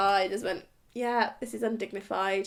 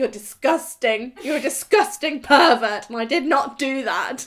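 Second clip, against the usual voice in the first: mock outraged, indignant, very loud outburst; 3 semitones higher, 9 dB louder than usual. Retelling a reply to a date's accusation: retelling an indignant reply. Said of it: "so indignant".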